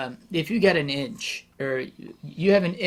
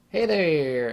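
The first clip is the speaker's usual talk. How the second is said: put-on western country twang accent. Describing the drag queens she'd hope to see, doing a western twang. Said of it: "nice Western twang".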